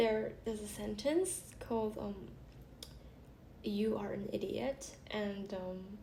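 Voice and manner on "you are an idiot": ordinary delivery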